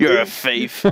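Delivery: imitated lisping speech. Teasing another speaker about stealing money: imitating James with a lisp. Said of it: "That's what James would say with his lisp".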